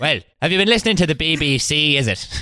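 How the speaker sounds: put-on Irish mammy voice. Imagining someone arrested by the NKVD and confronted by a character: Mrs. Brown voice. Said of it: "not to do the voice".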